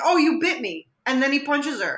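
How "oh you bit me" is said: normal talking voice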